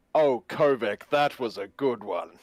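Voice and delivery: overdone, showy, a touch too emphatic. Speaking in character, deliberately slightly too loud. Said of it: "Slightly too loudly".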